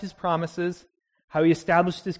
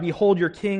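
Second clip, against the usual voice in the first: usual speaking voice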